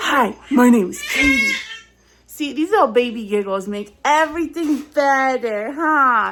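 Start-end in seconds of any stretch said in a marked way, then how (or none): 0.0-1.5 put-on super husky, raspy, pitched-up child's voice. Describing what their voice sounded like as a kid: husky, raspy kid voice. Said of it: "I had like a super husky, raspy, raspy voice".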